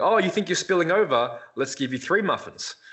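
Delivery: enticing, high-pitched, excited, irresistible-sounding voice. Imitating a pro bodybuilding coach prescribing muffins: imitating Chris Aceto. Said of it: "It's like".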